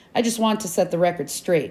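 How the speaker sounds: plain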